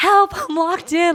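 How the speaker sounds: put-on very high, drawn-out little-girl screaming voice. Speaker retells Kelly locking herself in a plane bathroom, imitating Kelly's little-girl scream. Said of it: "Like this like little girl's voice".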